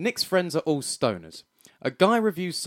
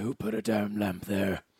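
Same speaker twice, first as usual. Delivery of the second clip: low, slow, deep growling voice. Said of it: "he sounds like Batman".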